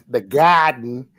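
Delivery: put-on New York accent on the word "garden". Urged not to be shy, the speaker tries a put-on New York accent. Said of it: "let me get my New York accent".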